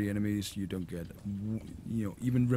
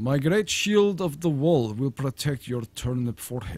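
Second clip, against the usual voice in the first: loud, hammy, badly put-on Russian accent; 4 semitones higher, 5 dB louder than usual. Playing a shooter game, the speaker talks as his character: bad Russian accent. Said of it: "In a bad Russian accent".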